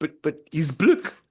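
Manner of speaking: put-on South African accent. Echoing the other speaker's retold line: put-on south african accent. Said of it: "You're doing, like, a South African".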